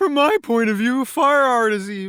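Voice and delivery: bad impersonation done badly, very high pitch. Discussing a book villain, doing a bad Anakin impression. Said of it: "That's a bad Anakin impression".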